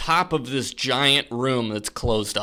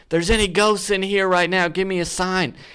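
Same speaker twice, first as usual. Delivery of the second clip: play-acted, high, goading, provoking yell; 7 semitones higher than usual. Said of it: "And he yells it again".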